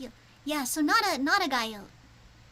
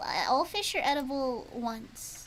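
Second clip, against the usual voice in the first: ordinary talk, nothing marked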